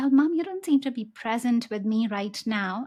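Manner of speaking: ordinary delivery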